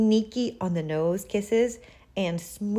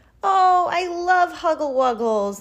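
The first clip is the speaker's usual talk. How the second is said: loud, shrill, stretched-out, drawn-out squeal; 8 semitones higher, 5 dB louder than usual. Reading a story, an aunt reacts as her nephew opens his arms, squealing. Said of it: "squealed Aunt Lulu".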